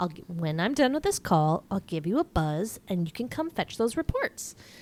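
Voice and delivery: mock plain, no-nonsense, businesslike matter-of-fact tone. Retelling a favorite scene, quoting Sue Ellen: imitating a matter-of-fact tone. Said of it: "a very matter of fact".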